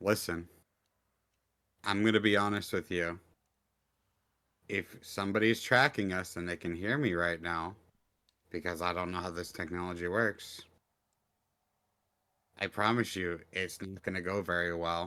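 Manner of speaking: low mutter, half to oneself. Speaking in character while walking, muttering under breath. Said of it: "I'm gonna mutter under my breath".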